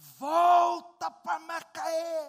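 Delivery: very loud, high, strong-voiced yell, volta drawn out. Retelling how a young, strong man kept shouting: shouting loudly. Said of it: "o homem gritava assim".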